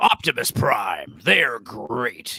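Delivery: put-on cartoon tiger voice with rolled R's. Showing how to do an Optimus Prime impression: Optimus Prime voice via Tony the Tiger. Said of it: "you just do Tony the Tiger, but, like, kinda roll your R's more".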